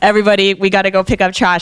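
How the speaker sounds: loud megaphone-style announcer voice. Retelling the end of a camping trip: imitating Ben's megaphone announcement. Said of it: "doing his, like, megaphone chat".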